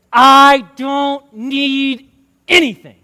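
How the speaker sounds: loud, forced through clenched teeth. Retelling how a man refused help: retelling words through clenched teeth. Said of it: "with clenched teeth".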